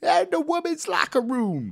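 gleeful, very high, swooping commentator voice, badly done. Recalling a favorite bit of wrestling commentary: terrible Dusty Rhodes impression. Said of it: "That's a terrible Dusty Rhodes impression".

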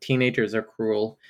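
usual speaking voice

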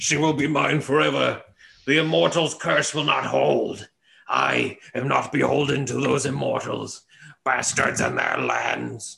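put-on drunken creature voice. The game master voices a bloodied character stumbling back and forth, in a drunken voice. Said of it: "drunkenly stumbling back and forth".

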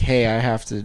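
ordinary delivery

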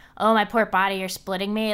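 ordinary delivery

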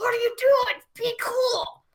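very high voice through gritted, clenched teeth. Retelling Jillian's reaction to Shelly's story, retelling speech through clenched teeth. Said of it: "clenched teeth all the way".

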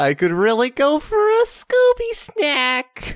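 badly done high, swoopy slacker voice. Joking with a co-host about their worst impressions, doing a bad Shaggy impression. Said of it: "formal apology to Matthew Lillard".

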